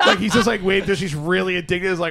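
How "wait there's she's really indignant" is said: usual speaking voice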